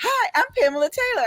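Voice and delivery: very high, cheerful, happy little voice. Retelling a phone call that woke them: imitating Pamela Taylor's happy little voice. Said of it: "this happy little voice says".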